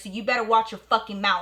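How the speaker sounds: put-on angry outburst. Retelling confronting a neighbour about her mother: own angry outburst. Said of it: "I started going off".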